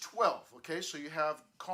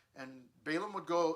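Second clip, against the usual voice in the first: plain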